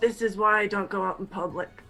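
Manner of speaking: half-whispered, muttered under breath to self. Speaking as a character during an awkward shop talk: half-whispering under breath. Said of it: "I whisper under my breath to myself".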